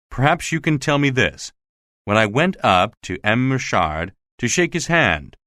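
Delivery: ordinary delivery, nothing marked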